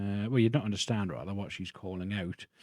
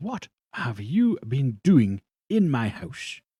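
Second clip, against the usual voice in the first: furious, stern, very loud angry voice; 4 semitones higher, 8 dB louder than usual. Voicing a very angry, stern-looking woman confronting a player: angry stern woman. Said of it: "very angry, very stern-looking woman".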